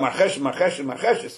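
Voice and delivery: ordinary talk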